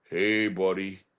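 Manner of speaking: put-on elderly, unfamiliar-sounding old man's voice. Retelling what a stranger said after being plucked: imitating an old man's different voice. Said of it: "in a different voice".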